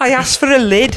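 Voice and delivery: put-on Liverpool accent. Reading out a story about an unwelcoming shop assistant, in a Scouse accent. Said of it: "Scouse accent".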